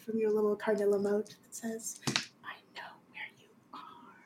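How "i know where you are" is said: very quiet, soft, breathy whisper. Voicing an unseen presence speaking to the players: whisper. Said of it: "a little whisper inside".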